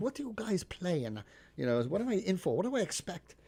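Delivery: heavy put-on German accent. Retelling what the woman who hired the band asked: imitating thick german accent. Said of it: "she has some really thick German accent".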